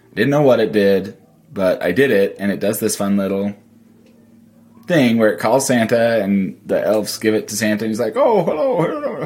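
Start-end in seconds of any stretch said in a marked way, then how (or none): 8.2-9.3 very high, cheery voice with pitch pushed up. Retelling a device feature that calls Santa, doing his greeting in a Santa voice. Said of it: "good Santa voice".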